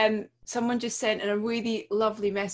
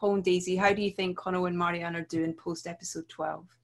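usual speaking voice

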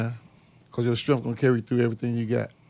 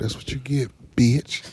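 close, private whisper, as into an ear. Taunting someone who just got played, whispering in their ear. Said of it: "I'm going to whisper this in your ear".

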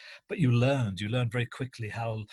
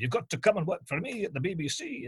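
thick, very broad Scottish brogue, pitched up; 7 semitones higher than usual. Telling how a school teacher was recruited to the BBC, do Angus Mackay's very broad Scottish accent. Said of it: "in a very broad Scottish accent".

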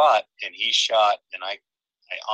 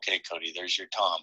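whisper, much quieter; 3 semitones lower, 7 dB quieter than usual. Retelling what the speaker whispered to Cody as a tom approached: retelling a whisper. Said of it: "And I whispered to him".

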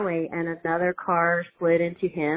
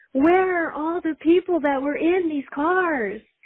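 play-acted shrill scream, very high; 11 semitones higher than usual. Retelling standing in the median finding the cars empty; retelling a scream. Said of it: "and I'm just screaming".

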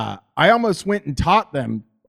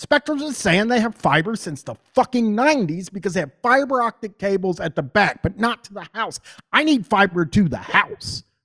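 high-pitched, heated, ranting shout; 5 semitones higher than usual. Ranting about a provider's fiber claims: yelling. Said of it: "I didn't mean to yell there".

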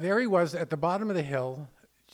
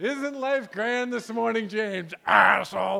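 bright, bubbling, very cheery voice; 6 semitones higher, 5 dB louder than usual. Retelling own morning greeting to james: retelling own bubbly greeting. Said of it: "I would always do it in this real bubbling".

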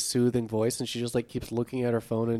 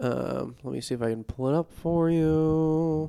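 icky podcaster voice, pitched up, "you" drawn out; 5 semitones higher than usual. Offering to pull up a show for the other speaker, in a gross podcaster voice. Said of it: "I just did like a gross like podcaster voice".

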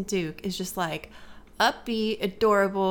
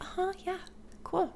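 barely-there hushed, super quiet, breathy whisper; 10 semitones higher, 10 dB quieter than usual. Retelling a scene where a chatty woman talks to Adelaide: imitating Adelaide super quiet. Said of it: "Adelaide's just like super quiet".

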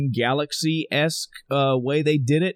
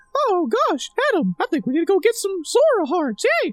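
very high sing-song cartoon voice, swinging pitch. Asking listeners which of two tries sounds more like Mickey Mouse, Mickey Mouse voice. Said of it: "Which of these two sounds more like Mickey?".

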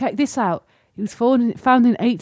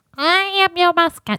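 high little cartoon mouse voice; 8 semitones higher than usual. Demonstrating how the mascot sounds, in a Benjy Mouse-like voice. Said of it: "he sounds like this".

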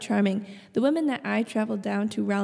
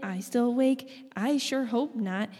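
normal talking voice

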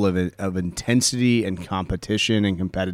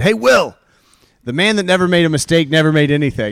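hollered, raised, high-pitched yell; 7 semitones higher, 6 dB louder than usual. Retelling yelling at a man who was beating himself up over a mistake, re-enacting the yell. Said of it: "And I yelled at him".

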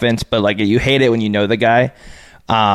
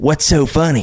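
put-on rural country accent, higher-pitched; 5 semitones higher than usual. Retelling what he asked the players laughing on the sideline, in a country accent. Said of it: "in his country accent".

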